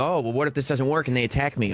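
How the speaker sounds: plain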